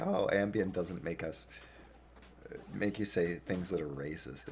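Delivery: ordinary talk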